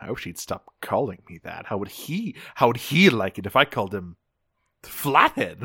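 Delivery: low, grumbling mutter to himself. Retelling a cartoon scene, imitating Thrust muttering to himself. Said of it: "muttering to himself".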